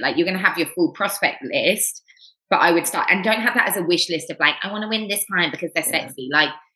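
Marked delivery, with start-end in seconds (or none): 4.6-6.3 small, little, whiny, whingy voice. Speaker mocks wish-list prospecting, imitating a whingy voice. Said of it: "that little whingy voice".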